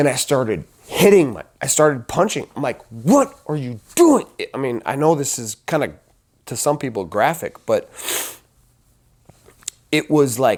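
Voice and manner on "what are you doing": play-acted outburst, self-scolding screaming held in. Recalling a blood-red rage, the speaker acts out screaming at themself. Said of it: "I'm screaming at myself".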